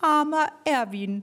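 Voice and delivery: calling out. Someone among the athletes gathering round calls out, called out. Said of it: "rief irgendwer".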